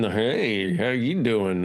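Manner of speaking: mock-flirty voice of a flirting man. Describing a man who starts flirting, imitating his line: mock-flirty 'hey, how you doing'. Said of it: "And now he's now he's flirting".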